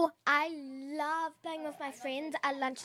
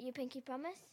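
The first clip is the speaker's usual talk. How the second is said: very soft, quiet whisper. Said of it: "I'll whisper it in your ear".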